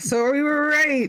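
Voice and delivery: high, loud, dumb-sounding put-on voice.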